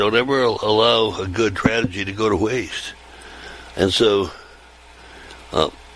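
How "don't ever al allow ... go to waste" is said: normal talking voice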